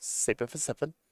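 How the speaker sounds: whispered, breathy, strange put-on voice. Commentating a card game play in an odd put-on tone. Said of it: "Don't know why I said it in that tone and that voice".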